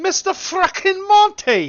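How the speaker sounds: loud, high, swooping, booming put-on English accent. On the gaming channel, greeting Monty, the speaker slips into an English accent. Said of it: "Why'd I do an English accent?".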